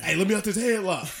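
high, loud, fake choked voice. Acting out being caught in a headlock: pretending to be choked in a headlock. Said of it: "I'm just getting in the headlock".

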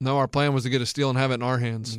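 put-on flat delivery. Retelling a press-conference answer to a reporter's question, acting out a deadpan reply. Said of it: "I loved his just deadpan".

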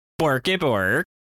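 put-on mock Swedish accent. Co-host, asked to say hi in the podcast intro, answers in a Swedish Chef voice. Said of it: "Why'd you say that in, like, a Swedish chef way?".

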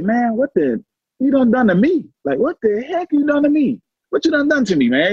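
high, wide-ranging amazed cry of disbelief.

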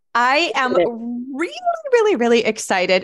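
gushing excitement, voice way up and swooping. A podcast guest, just welcomed onto the show, answers the host: voice high with excitement. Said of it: "My voice goes high when I get excited".

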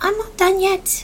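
very high, small, tiny whispered voice. Player's character pops out of nowhere, heard by Don Jarius: tiny voice. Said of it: "would just hear that tiny voice".

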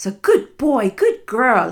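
high, sing-song voice with an approving tone. Demonstrating how voice praise is used as a reward, in a higher-pitched praising tone. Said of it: "I personally use a more higher pitched tone to my voice".

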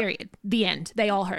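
ordinary talk

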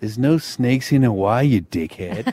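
put-on broad, thick Californian accent, laid on. Telling a story, quoting a dude's reply in a thick californian accent. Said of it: "in a thick Californian accent".

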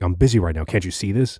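mock angry barking snap. Retelling how a group leader answered a request: imitating someone barking angrily. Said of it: "barks at me".

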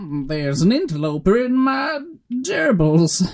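high, slow, unhinged crazed voice. Telling how enemies react when he crouches close, a crazy splicer impression. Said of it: "That's my impression of a crazy splicer".

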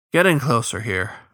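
ordinary talk

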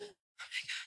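breathless, panicked, whispered voice. Retelling finding dreads had started on their own: imitating own past panic. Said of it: "I was panicking".

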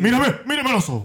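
put-on shouting. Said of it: "Yo grito así, mira".

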